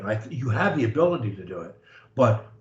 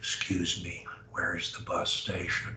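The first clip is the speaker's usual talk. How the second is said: half-whispered, partly whispered voice; 5 semitones lower, 11 dB quieter than usual. Demonstrating how to speak to a stranger on a street corner; half whisper. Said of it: "use basically a half whisper as your voice".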